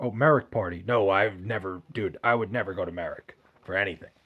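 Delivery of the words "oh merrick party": ordinary talk, nothing marked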